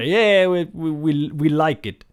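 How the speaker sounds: very slow, loud, bad put-on French accent. Imitating Parisians approving a deal: horrible French accent. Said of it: "that was a horrible French accent".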